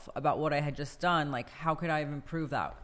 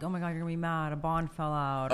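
ordinary delivery

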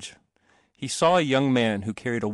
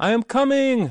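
very high, loud, ringing shout; 12 semitones higher, 5 dB louder than usual. The boy is returning at night, forgetting his resolutions again, shouting. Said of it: "he shouted".

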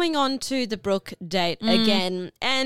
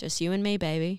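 put-on quiet whisper, lower and quieter; 6 semitones lower, 6 dB quieter than usual. Retelling what Holly whispered after the rose ceremony: imitating Holly whispering. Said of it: "whispers quietly".

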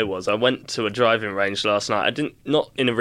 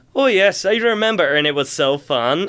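put-on high Irish accent drifting into an American accent; 8 semitones higher, 4 dB louder than usual. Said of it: "he started each sentence Irish and ended it American".

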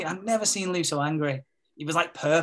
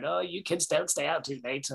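creaky, put-on fake old man voice; 4 dB quieter than usual. Retelling Carl making dad jokes to the kids, putting on an old man voice. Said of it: "putting on the old man voice".

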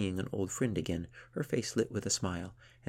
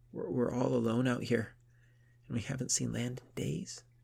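whisper, much higher pitch; 5 semitones higher than usual. Yadith tells the seal they are alone out at sea; whispering. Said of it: "she continued in a whisper".

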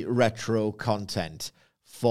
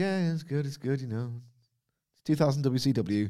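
put-on blasé voice, higher pitch; 4 semitones higher than usual. Mocking a wrestling writer's take on Dynamite: blasé Dave Meltzer impression. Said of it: "he's a bit blasé about Dynamite these days".

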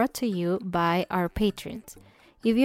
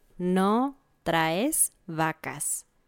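slow, careful, deliberate, drawn-out delivery. Repeating the phrase of the day for learners, a little slower. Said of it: "un poco más lento voy a decirla yo".

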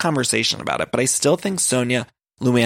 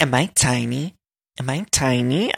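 flirty tone, every word dragged out slowly. Retelling how Ramona got flirty with a tall guy: imitating Ramona flirting. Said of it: "Ramona got all flirty with him".

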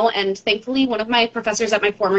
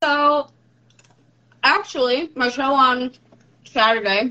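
talking with candy in mouth, mouth full; 3 semitones higher than usual. Starting to answer a question about the show, talking with candy in mouth. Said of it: "shoved candy in my mouth while I started talking".

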